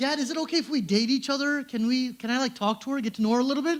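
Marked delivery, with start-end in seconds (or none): none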